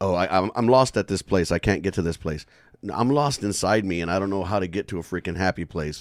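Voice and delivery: ordinary talk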